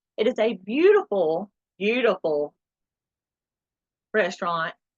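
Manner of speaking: sarcastic, ironic, tongue-in-cheek tone. Describing the Waffle House restaurant to listeners: sarcastic. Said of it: "I'm saying that sarca-, sarcastically".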